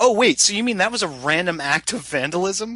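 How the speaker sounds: mock sudden surprise, high-pitched and startled. Retelling a film scene where characters find drugs: imitating a surprised reaction. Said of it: "they're surprised by it in, in, in a very specific way".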